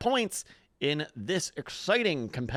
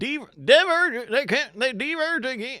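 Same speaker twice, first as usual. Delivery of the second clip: strong, raised, put-on American West accent; 7 semitones higher, 5 dB louder than usual. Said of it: "kind of a strong American West".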